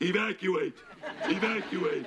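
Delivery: high robotic computer voice in automated announcement style. Describing smoke alarm sounds, a speaker does a computer voice. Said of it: "you can even have a computer voice that says".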